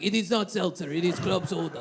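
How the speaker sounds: low, soft mock German accent. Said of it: "for Germans to be like".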